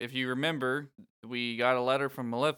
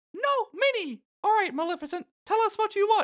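high, strong, squeaky voice; 6 dB louder than usual. Doing Mickey Mouse voices with the others, speak in a Mickey Mouse voice. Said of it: "We're just doing Mickey Mouse voices".

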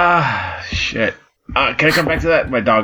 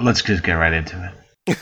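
very low, sultry, seductive voice; 8 semitones lower, 4 dB quieter than usual. Moving the group straight into the main discussion, sultry. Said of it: "He sounded so sultry there".

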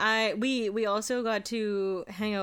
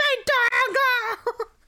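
very high, shrill, loud panicked crying wail; 7 dB louder than usual. Retelling losing a work mouse dongle at home: imitating own past screaming. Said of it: "screaming, crying, like, throwing shit around and being like".

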